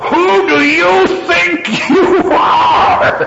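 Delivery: furious, high, very slow laughing roar.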